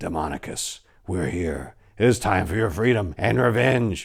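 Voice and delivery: whispered demonic voice. A game master voicing a spirit whispering in the players' ears, demonic whisper. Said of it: "a demonic voice whispering in your ears".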